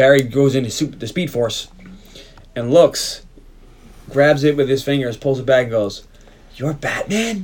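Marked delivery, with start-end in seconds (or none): 6.6-7.4 all worked up, excited, starstruck, pitched-up. Retelling a scene where Barry pulls Batman from the Speed Force: acting out Barry all excited. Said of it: "Gets all excited".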